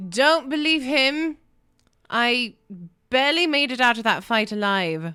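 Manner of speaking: loud called-out shout, carrying far. Player's character shouting out as the group enters the room, shouting. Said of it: "I'm going to shout out".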